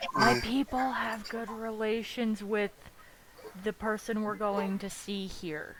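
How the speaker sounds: soft, half-whispered aside. A character leans down to a companion and half-whispers to him. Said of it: "whispers to him".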